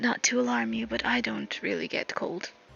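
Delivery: hushed, confiding soft whisper. Voicing a character leaning over to another: whispering. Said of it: "whispers to you".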